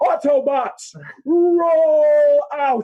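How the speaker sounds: very high, loud shouted yell, drawn-out roll. Retelling what four friends yelled at a man at a red light, retelling a yell. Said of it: "just to yell".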